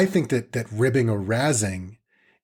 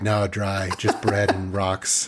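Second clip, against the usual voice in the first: mock-deadpan, flat delivery; 3 semitones lower than usual. Speaker retells a joking back-and-forth, quoting the other person: retelling a deadpan reply. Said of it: "so deadpan".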